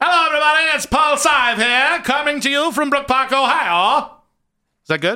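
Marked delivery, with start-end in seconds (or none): 0.0-4.1 put-on high, drawn-out 1920s sportscaster voice, Ohio accent. Proposing another way to give a stadium report, in a 1920s sportscaster voice. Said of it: "talks like a 1920 sportscaster".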